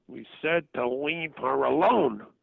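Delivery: rough, angry, nasty, demanding demonic voice. The speaker retells what a demonic voice said over the phone, angry and nasty. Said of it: "in this in this very angry, demanding, nasty voice".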